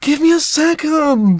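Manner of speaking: put-on cranky tantrum. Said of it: "Cranky tantrum teenager".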